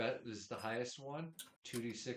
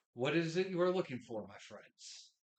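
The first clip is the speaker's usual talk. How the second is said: grinning through teeth, higher and slower; 5 semitones higher, 8 dB louder than usual. Narrator voicing a character greeting the players: speaking through a toothy grin. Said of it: "he he smiles his most toothy grin to you and says".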